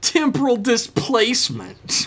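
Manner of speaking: very high, swooping, theatrically exasperated. Reading techno jargon the way Josh tends to, mock-exasperated Josh imitation. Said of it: "said mockingly exasperated".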